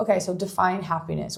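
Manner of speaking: ordinary talk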